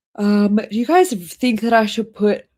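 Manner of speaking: talking through a yawn. Asking viewers a question while talking through a yawn. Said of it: "sorry for the yawning".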